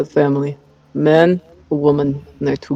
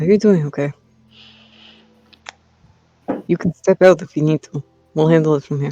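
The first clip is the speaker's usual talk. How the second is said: speaking in a whisper. Leaning in to check on Tommy in character: whispering. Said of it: "lean in and whisper to him".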